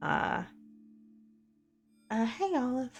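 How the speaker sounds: very meek, timid, hesitant, high little voice. Narrating a game scene, the speaker voices Jane calling to Olive in a very meek voice. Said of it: "you hear a very meek voice".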